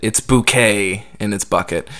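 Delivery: plain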